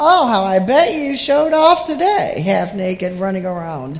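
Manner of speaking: put-on deep, low voice dripping with sarcasm. Speaker imagining McCall's remark during a lesson, McCall's line in mock sarcasm. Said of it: "dripping with sarcasm".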